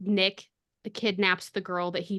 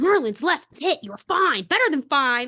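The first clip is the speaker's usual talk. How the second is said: super mad, high, loud angry yelling; 7 semitones higher, 8 dB louder than usual. Imagining how he would answer her question: imitating angry yelling. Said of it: "like just like angry yelling at her".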